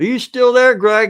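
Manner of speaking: very loud, high-pitched shouting call over distance. Calling out to greg, who is far away, shouting. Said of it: "I don't know why I'm shouting".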